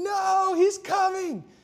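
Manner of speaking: mock shrill scream, very high. Retelling a rushed departure for the hospital, quoting her: imitating her screaming. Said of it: "she starts screaming".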